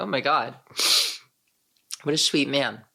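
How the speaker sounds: tearful, crying while talking. Reacting to a conversation with a kind man, crying while talking. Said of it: "I am crying".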